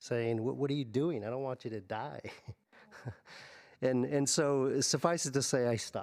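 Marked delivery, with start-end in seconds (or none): 0.4-2.2 rushed, crying, pleading voice. Father retelling what his eleven-year-old daughter said, imitating her crying. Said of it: "she looks at me and she starts crying".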